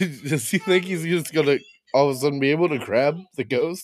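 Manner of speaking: ordinary delivery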